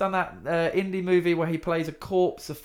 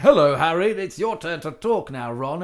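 flat, mechanical robot-like reading; 4 dB louder than usual. Mocking how the Harry Potter films' child actors sounded: imitating robotic Harry Potter actors. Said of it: "so, like, robotic".

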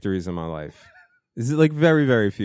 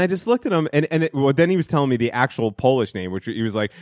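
usual speaking voice

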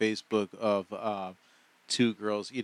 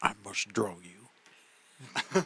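halting put-on voice, every word drawn out slowly; 2 semitones lower, 3 dB quieter than usual. Attempting an impersonation of a line from a Titanic scene: attempted George Bush impression. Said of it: "I really wish I could do a George Bush imp-".

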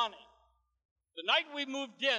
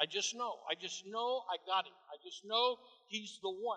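plain

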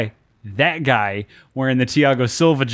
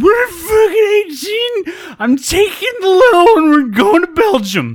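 put-on very high, loud, teary drunken wailing sobs; 6 dB louder than usual. Retelling watching videos late at night while drinking: imitating crying while drunk. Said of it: "crying, going".

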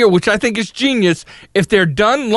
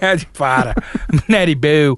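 Baltimore accent, much lower pitch; 7 semitones lower than usual. Speaker saying a line as if from Baltimore, in a Baltimore accent. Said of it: "I'm going to say it like I'm from Baltimore".

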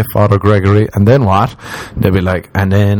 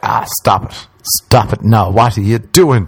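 mock scolding, telling-off tone; 2 semitones higher than usual. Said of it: "like your parents giving out to you".

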